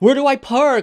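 shrill, very high scream at full volume. Retelling a driver who rolled down his window: imitating someone screaming. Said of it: "started screaming, like".

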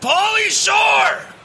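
huge, very high, loud, drawn-out scream at full lung power.

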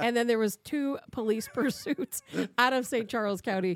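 talking between bursts of laughter. Retelling a robbery report after nearly misspeaking, laughing while talking. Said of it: "You laugh".

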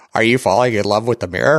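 synthetic, robotic computer-game voice. Recommending a game to another speaker, imitating its robotic voice. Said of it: "it's all robotic voice too".

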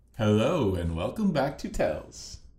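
high, sing-song, lilting delivery. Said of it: "Do I sound like you?".

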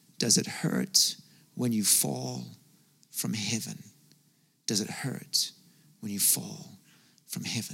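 very quiet, hushed, sinister dark demon voice. Retelling a phone call where a voice spoke into the room: demonic, dark voice. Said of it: "Like a demonic, dark voice".

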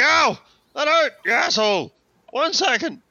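high, stung yelp, pitched way up. Voicing Fritz after a goblin shot him: voicing Fritz after being shot. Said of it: "Fritz is just like".

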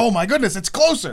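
loud, high, excited burst. Telling the audience about realizing the Switch launch was sooner: retelling getting real excited. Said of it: "Like I just got real excited".

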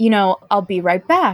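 ordinary talk, nothing marked

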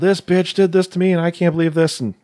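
high-pitched, mock screaming rant. Telling how a man reacted to finding his stuff on the lawn, imitating someone screaming. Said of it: "screaming about".

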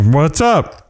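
acted out, severe, stern, firm, no-nonsense tone. Retelling how he speaks to his wife and kids, retelling a loud stern voice. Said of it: "And like a stern voice".

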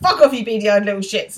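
all-out abusive outburst, furious yelling, temper snapping. Retelling how Will loses his temper at the seagulls: imitating Will losing his temper. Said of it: "Will completely loses his temper".

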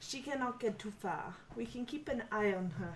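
very quiet, hushed, conspiratorial half-whisper. A player, in character, half-whispers to Clem: half-whispering. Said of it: "I whisper to Clem".

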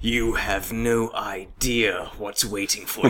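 put-on very low, hushed, soft English accent. Repeat for your listener the line he actually said, in a Loki voice. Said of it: "He actually says this in a Loki voice".

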